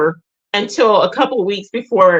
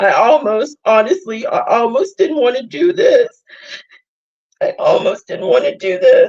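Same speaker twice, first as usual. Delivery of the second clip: tearful, wavering voice, speaking through tears; 3 semitones higher than usual. The speaker apologizes to viewers for crying, speaking through tears. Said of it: "I'm sorry I'm crying".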